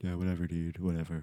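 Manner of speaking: flat, soft, dull, level monotone. Complaining that his co-host has sounded depressed all day, he mimics her in a mock monotone. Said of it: "She has been so monotone".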